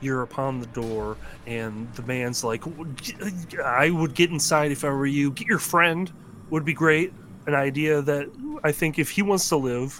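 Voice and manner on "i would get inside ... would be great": anxious, very nervous coaxing, pitched up and raised. Game master voicing a man at a cabin door urging a player inside, nervous. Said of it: "he's kind of coming at this very nervously".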